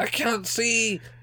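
put-on very high, shrieking scream. Retelling what the landlady cried out, imitating the landlady screaming. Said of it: "all you hear is landlady going".

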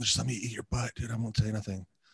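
soft, hushed half-whisper under the breath. Retelling a request to a stripper in the VIP: imitating own half-whisper. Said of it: "I'll whisper to the stripper".

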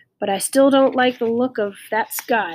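plain

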